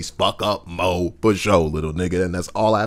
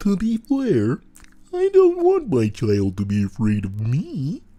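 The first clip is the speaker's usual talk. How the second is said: put-on character voice, high, swooping, slow and sing-song; 8 semitones higher than usual. Retelling what Jesus said about his child, doing a Jesus voice. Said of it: "Let me do a Jesus voice".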